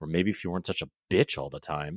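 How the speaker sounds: low, muttered mumble under the breath. A father retells what he said walking away from his crying daughter: retelling a mumble under breath. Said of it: "I mumbled under my breath".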